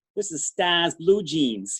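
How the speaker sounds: put-on New England accent. Retelling what Pam said at the grooming table: imitating Pam's New England accent. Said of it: "and Pam's New England accent".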